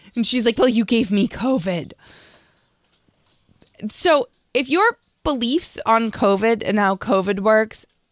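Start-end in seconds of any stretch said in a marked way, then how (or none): 0.5-1.9 mock preachy, moralizing tone. Retelling how she answered the person who gave her covid: imitating a moralizing tone. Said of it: "the moralizing tone".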